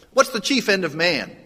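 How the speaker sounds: loud, commanding, military-style parade-ground shout. Telling a story of a military man calling to a passerby, retold commanding military yell. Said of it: "he yells out in his commanding voice".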